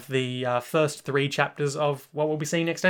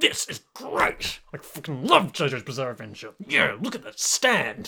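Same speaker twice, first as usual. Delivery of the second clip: forceful, pushy, aggressively positive enthusiasm, swooping. Demonstrating for the other speaker how it's done, aggressively positive. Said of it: "you got to be aggressively positive".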